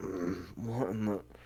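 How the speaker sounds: very soft, slow, drawn-out sleepy groggy mumble. Voicing party members waking up: groggy sleepy mumble. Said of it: "everyone else wakes up quietly, just goes".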